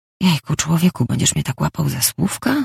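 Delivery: plain reading voice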